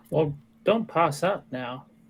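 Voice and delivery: put-on slow, drawn-out Southern American accent. Speaking in character during a game scene: southern accent. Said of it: "that's so southern. I don't know why I did that".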